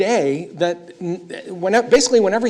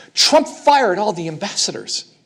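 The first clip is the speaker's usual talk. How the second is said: plain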